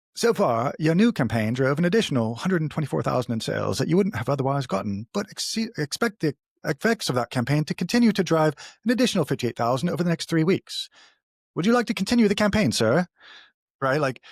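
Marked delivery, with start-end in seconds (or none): 0.2-13.1 bad put-on polite British computer voice, pitched up. Speaker voices a hypothetical computer assistant: bad Jarvis British voice. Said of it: "I'm going to have to be Jarvis in a British voice here".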